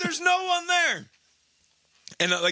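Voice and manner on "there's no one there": high, loud yelling. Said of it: "I'm just yelling".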